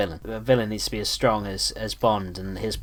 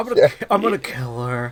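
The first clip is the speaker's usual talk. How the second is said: put-on menacing villain voice, higher and louder; 3 semitones higher, 4 dB louder than usual. Imitating a movie villain threatening to find and kill a girlfriend: Philip Seymour Hoffman impression. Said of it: "That's a great impression".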